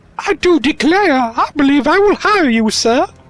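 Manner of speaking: very high, loud helpless damsel in distress act. Hiring a companion in a game, the speaker keeps up a damsel in distress act. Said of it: "my best damsel in distress act".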